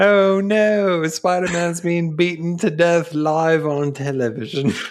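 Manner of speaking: put-on British newsreader accent. Recapping a scene, voicing the news reporter in a British accent. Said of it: "Why does New York City have a British reporter?".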